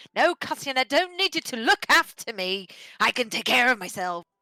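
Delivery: put-on, very loud, furious, angry scolding. Imitating how a companion would scold: Fenn's cold angry scolding. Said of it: "she probably would scold me".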